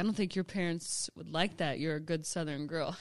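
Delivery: ordinary delivery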